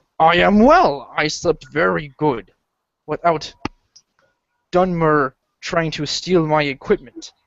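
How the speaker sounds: fantasy orc adventurer voice. Narrator voices the Orc answering a greeting from the party, orc character voice. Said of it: "The Orc says".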